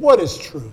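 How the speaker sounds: mock smug, dismissive, brushing-off tone. Acting out Pilate's reply to a man bearing witness to truth, mock-smug Pontius Pilate. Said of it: "Pilate smugly said".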